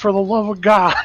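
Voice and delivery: yelling out.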